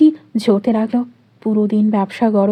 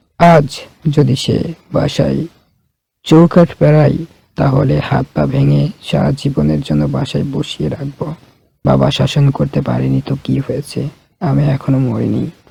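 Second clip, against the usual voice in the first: grave character voice; 9 semitones lower than usual. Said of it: "গম্ভীর গলায় বলে উঠলেন".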